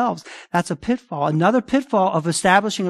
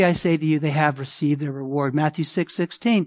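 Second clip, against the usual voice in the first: normal talking voice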